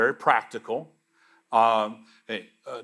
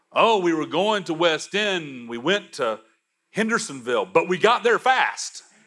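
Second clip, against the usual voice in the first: put-on high, cheeky, smart-aleck teasing; 6 semitones higher than usual. Recounting chiding others, the speaker repeats their own remark in a smart-aleck voice. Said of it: "in a smart-aleck voice".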